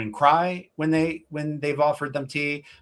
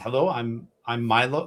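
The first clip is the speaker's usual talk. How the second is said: put-on very old person voice; 3 semitones lower than usual. Voicing a very old shopkeeper welcoming a visitor: Milos voice. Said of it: "this old person... says".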